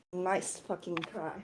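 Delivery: voice held firm, steady, no tremble. He wipes his tears away after looking at his mother, steady unshaking voice. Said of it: "in a voice that doesn't shake".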